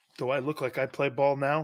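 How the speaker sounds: ordinary talk, nothing marked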